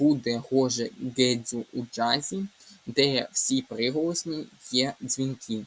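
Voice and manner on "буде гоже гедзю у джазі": plain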